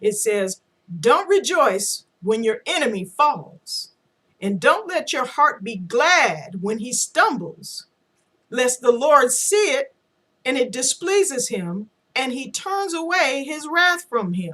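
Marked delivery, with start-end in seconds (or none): 1.0-14.5 very slow, deliberate, word-by-word reading. Quoting Proverbs to those wishing the president dead, reading really slowly. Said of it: "I'm going to read it really slowly".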